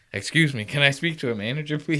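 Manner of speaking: spoken in a man's voice. Retelling a man walking around a resort: imitating a man asking for a manager.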